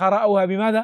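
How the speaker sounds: ordinary talk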